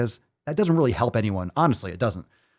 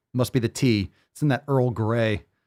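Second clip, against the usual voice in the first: ordinary talk, nothing marked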